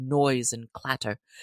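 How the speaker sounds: ordinary delivery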